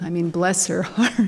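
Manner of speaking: ordinary talk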